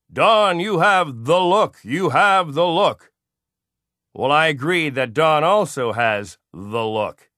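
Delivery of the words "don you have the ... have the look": high, grand, booming, magnificent shout. Retelling how a longtime acquaintance greets the speaker, imitating Don shouting. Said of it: "he starts shouting with his magnificent voice".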